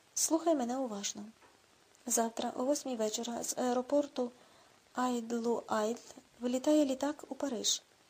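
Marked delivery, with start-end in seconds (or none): none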